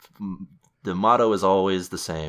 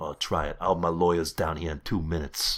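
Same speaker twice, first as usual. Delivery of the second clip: put-on Italian-American mobster accent; 3 dB quieter than usual. Speaker acts out a character's reply to Stabler: Tony Soprano impression. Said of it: "I don't know how that accent".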